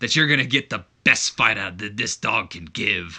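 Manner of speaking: wrestling promo-style delivery, cut hard. Voicing a wrestler's promo reply, sounding like Wolverine. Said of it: "I don't know why he sounds like Wolverine".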